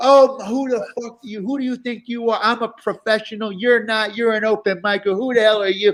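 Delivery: acted-out, totally unhinged furious rant. Retelling a comic's outburst at an open micer on Zoom: imitating someone going off angrily. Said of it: "totally apeshit on the guy".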